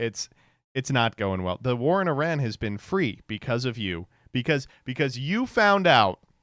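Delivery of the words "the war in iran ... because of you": normal talking voice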